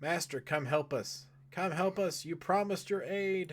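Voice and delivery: high, desperate yell at full volume, sounding far-off. Voicing a character calling out from right there, yelling. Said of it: "He's just kind of right there yelling".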